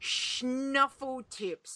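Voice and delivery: deliberate, careful reading aloud. Reading out a list of names and scores, saying a hard name very slowly. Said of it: "I said that very slowly".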